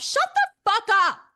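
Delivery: full-on, shrill, very loud screaming, pitched way up. Retelling screaming at a laptop during a show: retelling a scream. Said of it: "I literally screamed at my laptop".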